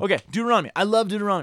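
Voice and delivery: hurried, headlong, rushed, rattled-off delivery. Starting the talk on the next book of the podcast: talking fast. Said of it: "Why am I talking so fast?".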